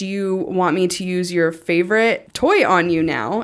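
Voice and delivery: ordinary talk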